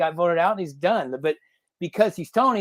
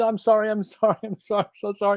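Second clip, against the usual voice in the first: mock tearful, crying voice; 3 semitones higher than usual. Retelling how a man apologized to an eel that was just killed: imitating a tearful apology. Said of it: "he starts apologizing to the eel".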